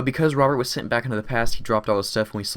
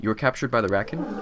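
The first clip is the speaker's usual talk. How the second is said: ordinary delivery, nothing marked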